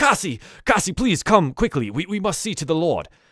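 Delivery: shouting character voice. Narrating a scene for players, voicing a worried character calling for help: character yelling. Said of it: "he starts yelling".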